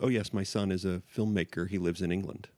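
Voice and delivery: ordinary talk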